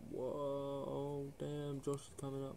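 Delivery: high, hushed, shocked gasp.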